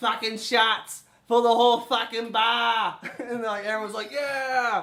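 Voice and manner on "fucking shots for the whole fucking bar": put-on loud, heavy, thick Boston barroom-style accent. Retelling how Giala would yell at the bar, Giala's thick Boston accent. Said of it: "Thick Boston accent".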